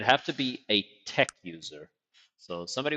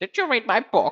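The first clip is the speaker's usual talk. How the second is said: shrill, very high, booming, loud put-on gnome voice; 13 semitones higher, 8 dB louder than usual. Asking where something is, then switching to a gnome character voice. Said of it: "let me do my gnome voice".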